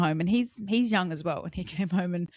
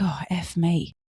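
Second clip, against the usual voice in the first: muttered quietly under the breath. Retelling what a mum said at the playground: imitating a muttered curse. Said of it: "And then under her breath".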